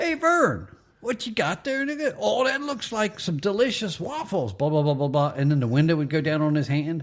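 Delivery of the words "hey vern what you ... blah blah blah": chatty salesperson voice, pitched up. Retelling how Ernest leaned in the window: Ernest impression. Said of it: "And he'd go".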